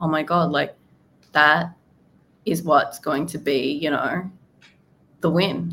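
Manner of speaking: plain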